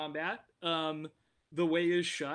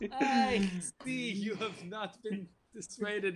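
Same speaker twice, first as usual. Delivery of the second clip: put-on Russian accent drifting into a Scottish accent; 4 semitones higher than usual. A storyteller voices Polya speaking to the players, in a Russian accent that sounds Scottish. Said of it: "That is still your Scottish accent".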